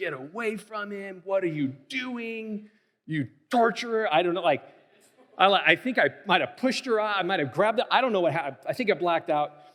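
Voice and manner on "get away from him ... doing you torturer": put-on furious yelling, high and drawn-out. Recounting losing it and yelling at a woman, retelling an angry yell. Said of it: "I just like started yelling".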